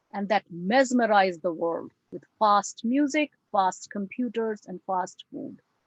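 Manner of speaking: lecturer-style voice reading aloud.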